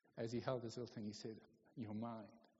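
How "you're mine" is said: quiet muttering, lower and quieter, under the breath. Telling a story of a boy holding the boat he bought back: under his breath. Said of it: "just under his breath".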